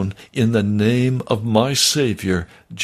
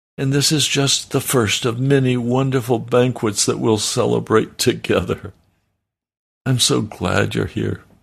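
normal talking voice

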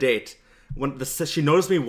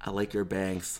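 soft, barely audible half-whisper; 6 semitones lower, 10 dB quieter than usual. Telling about a night out, repeating what he said to a girl: retold half-whisper. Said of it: "I whispered in her ear".

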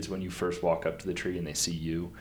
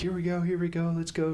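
acted, urgent, very high-pitched calling yell; 11 semitones higher than usual. Hiker retells calling her dog off the lion tracks, retelling a yell at the dog. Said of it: "And I'm yelling".

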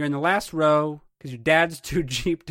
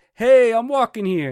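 raised, pitched-up voice with no real heat; 7 semitones higher, 8 dB louder than usual. Explaining a street-crossing moment, acting out the person's raised, not angry voice. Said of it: "He has raised his voice".

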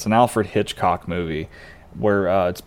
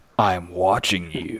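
very creepy, unsettling, sinister voice; 2 semitones lower, 4 dB quieter than usual. Retelling the line a man ad-libs when she answers the phone, in a very creepy voice. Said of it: "in a very creepy voice".

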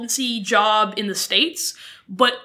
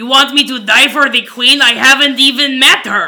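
put-on Quebec French accent, louder; 10 dB louder than usual. Joining in a joke about quebec and war: put-on quebec accent. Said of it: "You have to sound like a lumberjack".

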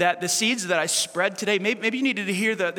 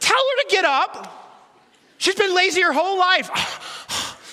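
mock very high, drawn-out, over-the-top resentful griping; 10 semitones higher, 4 dB louder than usual. Acting out a woman talking to the Lord, exaggerated mock complaining. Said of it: "I'm exaggerating. I don't do a good woman, bad attitude".

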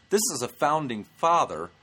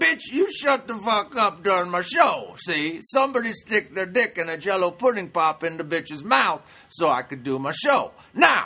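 mock high, snapping furious rant; 6 semitones higher, 4 dB louder than usual. Act out the outburst you expected on stage at a yelling woman, imitating Bill Cosby snapping. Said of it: "going to snap on stage".

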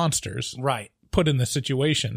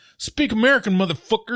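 put-on loud American accent; 7 semitones higher, 4 dB louder than usual. Describing movie characters as ugly American stereotypes, quote them in an American accent impression. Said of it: "It's a good American impression".

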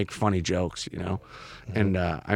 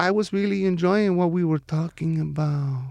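put-on sultry, higher voice with a slight Spanish accent; 9 semitones higher than usual. Retelling a woman's voice message: imitating a sultry Sofia Vergara voice. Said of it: "she has a very sultry voice".

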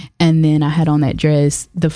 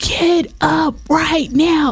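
very high, drawn-out, dragged screaming; 12 semitones higher than usual. Retelling to a friend what was shouted at someone lying on the ground, demanding she move, screaming at her. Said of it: "I'm like screaming".

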